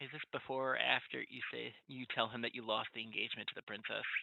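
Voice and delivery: hushed, low, very quiet murmur. A player has Zed swim up to the prince and ask, low tone. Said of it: "in a low tone be like".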